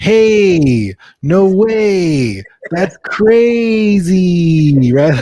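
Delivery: very slow Californian drawl, extremely stretched vowels. Showing how Californians talk: Californian elongated vowels. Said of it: "we tend to elongate our vowels".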